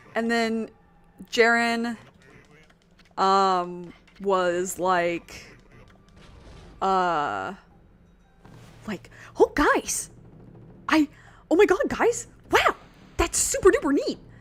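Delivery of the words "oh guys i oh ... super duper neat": rattled-off chatter, very high and loud. Recalling how a character was voiced in a read-through: fast-talking Jaren voice. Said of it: "talks fast".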